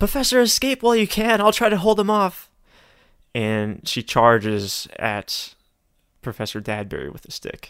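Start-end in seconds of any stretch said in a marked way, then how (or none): 0.0-2.5 very high-pitched, fast, loud yell. Game master voicing a dwarf woman calling to Professor Huxley, yelling back. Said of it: "she yells back to Professor Huxley".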